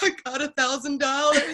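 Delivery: high, tearful, words coming out through crying. Retelling a phone call after getting the bonus: retelling own past crying. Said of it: "and I was crying".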